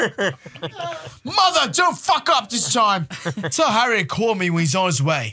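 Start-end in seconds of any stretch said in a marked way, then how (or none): 1.2-5.3 pompous, spoiled rich man voice. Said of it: "What's that fucking voice?".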